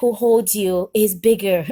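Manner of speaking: ordinary delivery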